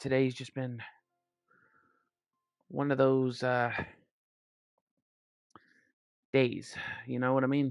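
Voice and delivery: breathless, hyperventilating. Getting ready to join a match, sounding out of breath. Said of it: "sorry if I sound hyperventilated".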